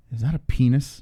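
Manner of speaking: mimicked whisper. Retelling the father watching the stream on his phone; imitating father's whisper. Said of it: "he like whispers in the background".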